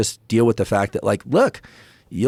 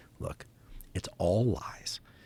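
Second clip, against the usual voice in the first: put-on very calm voice, lower and quieter; 4 semitones lower, 12 dB quieter than usual. Retelling what Rick Rubin said in a discussion: imitating Rick Rubin speaking very calmly. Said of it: "very calmly".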